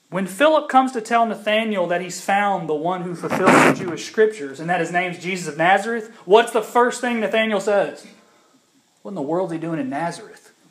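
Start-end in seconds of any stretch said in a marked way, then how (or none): 9.1-10.6 put-on voice dripping with prejudice. Retelling Nathanael's reply about Nazareth: Nathanael's put-on prejudiced voice. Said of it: "Can you just hear the prejudice in his voice?".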